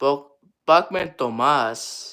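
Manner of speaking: put-on Spanish-accented pronunciation. Player saying the name bachman tomas, in a spanish accent. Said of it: "With a Spanish accent".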